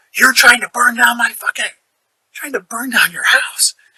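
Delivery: loud, high-pitched, screaming, accusing yelling. Retelling what the neighbor Rob yelled at the door: imitating Rob yelling. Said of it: "he starts yelling and screaming at me".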